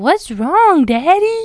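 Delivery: booming little-man voice, pitched very high. Recalling the son asking his dad what was wrong, in Evan's loud little man voice. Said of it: "Evan has a very loud little man voice".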